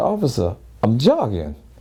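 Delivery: plain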